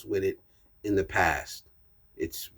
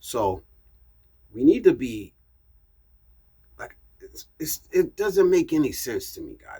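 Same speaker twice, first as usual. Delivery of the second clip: stammering with halting restarts, tripping over words; 4 semitones higher than usual. Talking straight to camera in his own video, stammering. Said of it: "I'm sorry I'm stammering".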